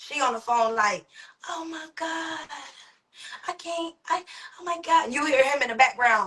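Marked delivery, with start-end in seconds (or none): 1.5-5.1 put-on stressed-out voice, high, slow, words stumbling. Retelling a phone call with the wife: imitating a stressed-out wife. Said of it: "She's stressed out".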